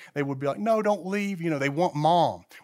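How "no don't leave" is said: put-on high, screaming, pleading child voice. A parent recalls their little kids as mom left for the store, imitating kids screaming. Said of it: "our kids would be like screaming and yelling".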